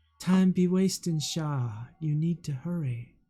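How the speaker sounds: mild, warm-toned, gentle voice. A voice in the listener's head urges Shah to hurry, warm and soft. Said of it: "warm, soft voice in your head".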